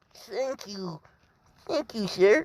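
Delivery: high, slow feminine voice. Recapping a scene, voicing Asui thanking Izuku: high-pitched feminine voice. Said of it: "I'm trying to make it like more high pitched for a feminine".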